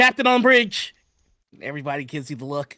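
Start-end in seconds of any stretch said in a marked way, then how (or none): 0.0-0.9 very loud, very high yelled call. Voicing an ensign announcing the captain's arrival on the bridge: ensign yelling. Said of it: "there is an ensign that sees you and just me yells".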